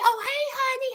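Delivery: acted-out, high, delighted, eager, excited, happy. Retelling how she answered his phone call, imitating an excited, happy greeting. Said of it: "she's excited and happy".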